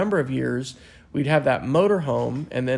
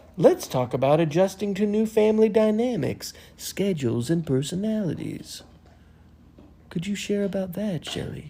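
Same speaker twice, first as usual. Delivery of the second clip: odd put-on podcast voice, weird and pitched up; 6 semitones higher than usual. Podcast host asking the co-host a question, in a weird put-on voice. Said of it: "Why are you talking in your weird voice again?".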